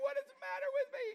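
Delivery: mock, squeaky very high, tearful, sobbed words. Retelling looking in the bathroom mirror, imitating own crying while speaking. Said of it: "I start crying".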